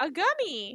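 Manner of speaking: high, squawky duck-like voice. Recounting a scene's dialogue, in a Donald Duck voice. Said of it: "It sounded very duck-like".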